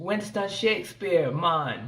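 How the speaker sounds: terrible, heavily put-on fake Jamaican accent. Speaker recounts a film scene where a young man gives his name, imitating Taye Diggs's bad Jamaican accent. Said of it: "he responds in a horrible Jamaican accent".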